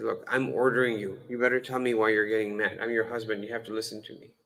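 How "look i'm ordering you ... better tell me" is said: plain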